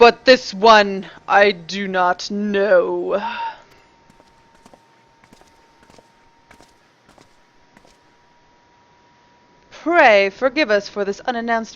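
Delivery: deep, drawn-out, put-on dragon voice. Doing a dragon's lines again after a first try, in a dragon voice. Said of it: "Now I gotta do my dragon voices".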